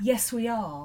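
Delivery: lofty, grand delivery. Recalling people asking if the Knight family was in, mock-grand reply. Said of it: "sort of grandly say".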